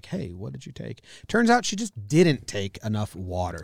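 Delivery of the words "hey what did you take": very quiet, hushed whispered aside. Retelling how mom quietly asked the sister what she took: imitating mom whispering. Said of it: "whisper to my sister and be like".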